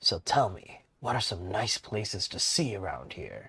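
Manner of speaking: put-on deep, low, gruff old-man voice. Speaker voices the old man Hendry asking Vin a question, deep gruff Hendry voice. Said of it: "a more deeper, gruff voice for Hendry".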